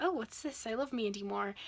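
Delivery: plain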